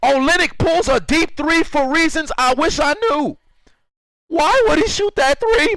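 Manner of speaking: cracking voice. Reacting to a player's puzzling three-point shot: voice cracking. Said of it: "My voice is cracking like".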